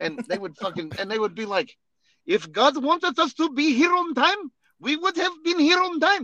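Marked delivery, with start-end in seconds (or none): 2.3-6.2 put-on Iraqi accent. Quoting the excuse of people who showed up late, in a put-on accent. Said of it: "there comes the accent".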